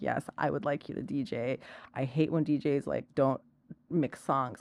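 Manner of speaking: calm, soft, composed businessman voice. Retelling a client asking for a DJ set, imitating Abel's calm businessman manner. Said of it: "the most calm, like, businessman".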